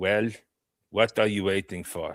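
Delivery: put-on Russian accent. Delivering a line he has to remember, in a Russian accent. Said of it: "Say it in accent Russian".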